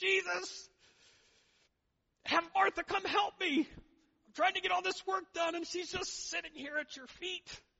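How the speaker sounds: very high, very loud, exasperated and frustrated. Retelling a story of a woman stuck cleaning up alone: acting out frustration. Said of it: "Martha gets all frustrated".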